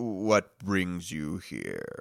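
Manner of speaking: slow, unhurried, drawn-out talking-tree voice. A game narrator voices a tree that turns out to be an ent: slow-talking ent. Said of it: "another NPC that talks slowly".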